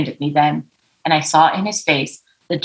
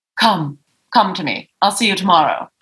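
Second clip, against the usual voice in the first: put-on fabulous British society-lady accent; 2 semitones higher than usual. Retelling a phone call with a horse owner: imitating her fabulous British accent. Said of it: "She's this fabulous accent".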